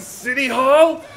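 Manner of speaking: high, loud, mocking gloating tone.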